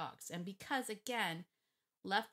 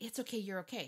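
mock-frantic, acted panic; 3 semitones higher than usual. Speaker retelling how a startled dog owner reassured her dog, imitating frantic reassurance. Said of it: "Now she was saying it frantically".

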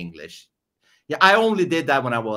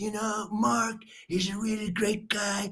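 very high-pitched put-on politician voice; 10 semitones higher, 7 dB quieter than usual. After being told they sounded like Trump, trying it: Trump impression. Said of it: "I've tried to sound like Trump".

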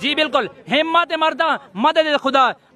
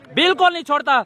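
ordinary delivery

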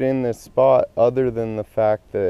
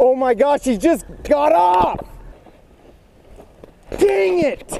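very high, exasperated, frustrated outburst. Losing a big fish on the line just now: frustrated outburst.

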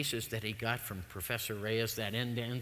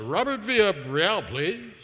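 put-on professional formal voice, higher, louder, slower; 7 semitones higher, 10 dB louder than usual. Retelling calling an atomic weapons lab to ask for someone, put-on professional voice. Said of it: "put on my most professional voice".

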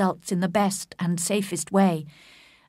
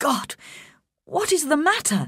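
high, swooping, alarmed outcry; 7 semitones higher than usual. He cries out to her, then offers to send for help, cried out. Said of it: "he cried".

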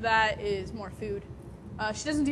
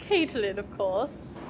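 put-on dainty British accent. Role-playing Tiffany answering a question, in Tiffany's dainty British accent. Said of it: "picture Tiffany as having a British accent and kind of dainty".

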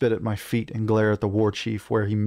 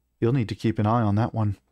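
plain

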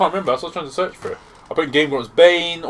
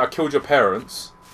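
normal talking voice

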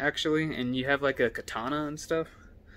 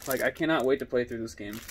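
usual speaking voice

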